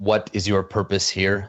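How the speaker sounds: distant, far-off robotic voice. Voicing a cube that asks the visitors their purpose: distant robotic voice. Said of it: "in a voice that sounds sort of, like, distant and, and sort of robotic".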